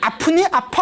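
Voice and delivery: high, cheeky, needling teasing taunt. Retelling what a talking lump said to the monk: imitating a taunting voice. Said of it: "막 이러면서 깐죽거리는 거".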